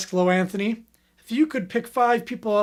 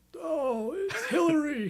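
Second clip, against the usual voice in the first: bad put-on southern politician voice, higher, quieter; 6 semitones higher, 6 dB quieter than usual. Asked for a horrible Bill Clinton accent, doing it. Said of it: "Do a horrible Bill Clinton accent".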